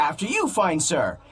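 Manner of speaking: oddly gracious, strangely polite courtly tone. Retelling how everyone acted strangely, imitating someone's strange politeness. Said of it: "You said".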